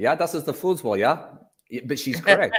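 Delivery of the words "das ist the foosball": higher-pitched put-on German accent. Quoting how Omni says the word foosball: Omni's German accent. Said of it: "calls it foosball with a German accent".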